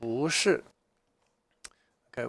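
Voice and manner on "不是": second, rising tone on 不: bú, not bù. Mandarin lesson on 不 before a fourth tone: rising second tone on 不. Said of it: "不 becomes a second tone".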